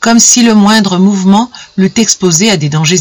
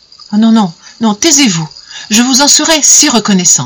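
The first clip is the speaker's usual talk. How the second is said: earnest, pleading, imploring, begging voice; 3 semitones higher than usual. A woman pleads with a man who is about to declare himself; begging. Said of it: "Elle le supplia".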